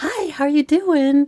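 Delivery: high, sugary, sweet, polite voice. Retelling how a mom answered a phone call after yelling, imitating mom's nice phone voice. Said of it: "how did that voice come out".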